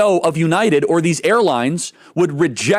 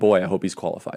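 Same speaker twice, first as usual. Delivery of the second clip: low, fast, soft mock-worried mutter. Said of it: "I'm gonna be like".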